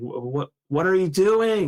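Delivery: high swooping shout that climbs. Retelling shouting at a brother during a losing final: imitating own past shout. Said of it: "I just shouted at him".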